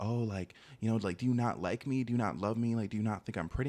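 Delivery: put-on sobbing, pleading voice. Retelling what she said the day after her birthday: imitating someone sobbing. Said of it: "crying, like, sobbing, like, uncontrollably".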